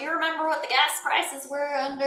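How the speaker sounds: put-on Southern American accent. Imagining what MAGA supporters would say, in a put-on Southern American accent. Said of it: "I don't know why I did a southern accent".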